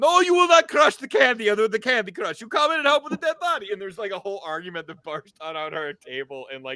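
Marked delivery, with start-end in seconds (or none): 0.0-3.7 shrill, high, booming fake Russian accent. Retelling an argument at the game table: mock russian accent. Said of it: "these mock Russian accents".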